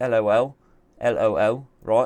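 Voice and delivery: put-on English accent with a fake laugh. Speaker analysing a chess position jokes aloud, in an english accent. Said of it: "I'm just doing it in an English accent".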